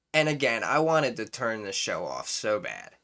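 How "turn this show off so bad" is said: ordinary talk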